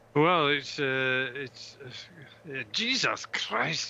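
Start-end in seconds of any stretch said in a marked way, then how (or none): 2.7-3.9 exclaimed in a Scottish accent. After Dave notices it, [name] swears again in a Scottish accent. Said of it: "that's a Scottish accent".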